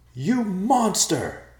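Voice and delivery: very high, loud, shrill shrieking scream. Someone screams at the messenger who killed the girl's father. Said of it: "Ben screamed".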